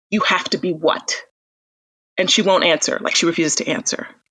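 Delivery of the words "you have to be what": mock-serious put-on voice, slower pace. Retelling a man who stops laughing cruelly and turns on her, retelling a sudden serious turn. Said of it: "his face snaps serious".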